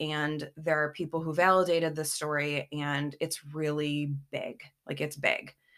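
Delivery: ordinary delivery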